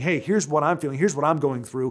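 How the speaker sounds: normal talking voice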